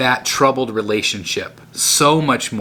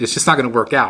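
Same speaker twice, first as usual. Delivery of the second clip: ordinary talk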